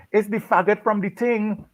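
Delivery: very high, shrieked, shrill, top-of-lungs yell. Retelling what a woman across the road yelled: imitating a woman yelling. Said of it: "she yells at the top of her lungs".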